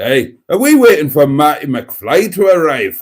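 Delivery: put-on Scottish accent. On a live stream, the speaker redoes a voice, making him Scottish: Scottish accent. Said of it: "I'll make him Scottish instead".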